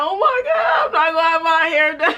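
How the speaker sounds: high, tearful crying through the words. Retelling panicking before prom without hair done: imitating own crying. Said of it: "So I was crying".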